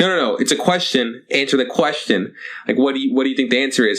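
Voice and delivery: ordinary talk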